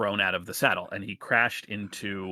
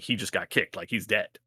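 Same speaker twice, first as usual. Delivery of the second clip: usual speaking voice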